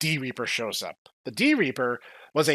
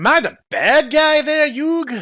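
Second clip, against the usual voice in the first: put-on high-pitched Brooklyn accent; 11 semitones higher, 8 dB louder than usual. Recapping a scene and quoting the character's moment, in Beelzemon's Brooklyn accent. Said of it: "I'm not doing the Brooklyn".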